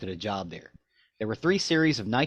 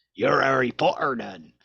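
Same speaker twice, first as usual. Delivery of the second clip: attempted northern English accent drifting off course; 2 semitones higher, 4 dB louder than usual. Trying a northern accent, the speaker ends up sounding like Hagrid. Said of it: "It it just ends up sounding like Hagrid".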